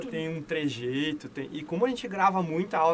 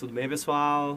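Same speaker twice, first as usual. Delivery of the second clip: calm, easy, relaxed, laid-back tone; 2 semitones lower than usual. Showing the calmer voice [name] has: calm [name] voice. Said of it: "aquela voz mais assim, mais calma".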